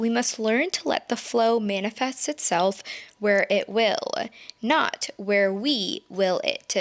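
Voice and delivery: ordinary talk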